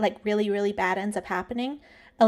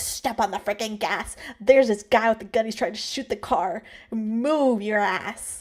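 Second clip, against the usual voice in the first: put-on panicked, frantic outburst. Imagining being in the car as a man shoots at it, acting out freaking out. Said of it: "I'd be freaking out".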